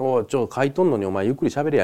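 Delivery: plain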